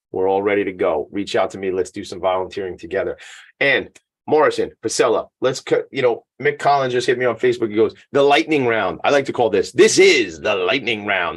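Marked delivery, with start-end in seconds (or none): 9.8-11.4 game show host announcer voice. Announcing the next round to listeners, game show host voice. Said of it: "This is my best game show guy voice".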